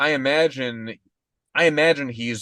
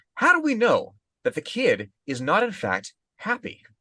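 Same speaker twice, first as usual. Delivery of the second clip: slow, stretched-out, swooping, high rising voice; 7 semitones higher than usual. Imagining a right-wing radio segment about the kid: Tucker Carlson impression. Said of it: "Tucker Carlson comes on and he's like".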